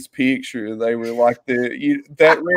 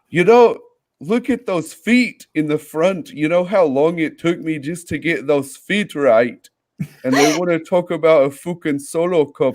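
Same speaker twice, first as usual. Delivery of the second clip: aggrieved, angry, griping rant; 2 semitones higher than usual. Imitating Carl complaining that people only talk about the Solo Cup: impression of Carl. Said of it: "really good impression of Carl".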